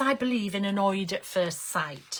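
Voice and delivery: ordinary talk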